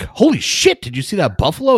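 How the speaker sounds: play-acted blurted-out yell, high and swooping. Retelling seeing a buffalo while driving: imitating own past yell. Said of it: "I yelled buffalo, but it was more like".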